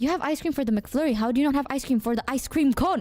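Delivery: plain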